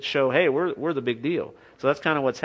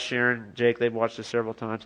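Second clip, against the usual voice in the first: usual speaking voice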